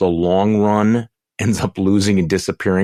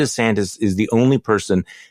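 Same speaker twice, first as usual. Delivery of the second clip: ordinary delivery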